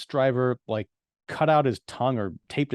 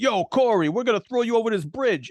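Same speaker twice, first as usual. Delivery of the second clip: very high, cartoonish, put-on Brooklyn accent; 10 semitones higher, 3 dB louder than usual. Retelling a movie bully's threat to Corey, in a Ninja Turtles Brooklyn accent. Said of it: "he's got like this Ninja Turtles Brooklyn accent".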